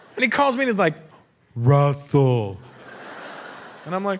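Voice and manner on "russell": very slow, each sound stretched very long. Retelling how a slow-talking man called the speaker: slow, drawn-out 'Russell'. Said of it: "He started speaking to me all slow".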